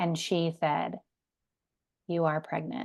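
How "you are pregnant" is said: put-on low defeated tone, quieter, faster. Recalling being told the ultrasound result, imitating a low, defeated tone. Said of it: "kind of with that tone, like very low".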